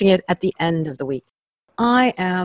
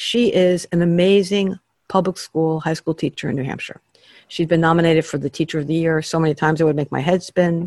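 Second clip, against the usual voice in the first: normal talking voice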